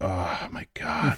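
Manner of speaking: put-on groaning. Recalling a fellow performer's reaction during rehearsals, imitating a groan. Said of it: "you could hear Ray just like groaning".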